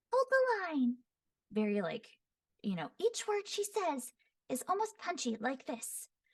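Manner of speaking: very high, airy, punchy, slightly raspy voice. Demonstrate how she says each word, in a high-pitched, slightly raspy, airy voice. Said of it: "high pitched, a little bit of rasp, and airy".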